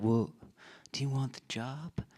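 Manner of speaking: put-on soft, gentle voice with slight southern accent. Recalling being offered a job, in Paul Taylor's soft southern accent. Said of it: "he's got this very like soft, s- s- slightly southern accented s- voice that he uses".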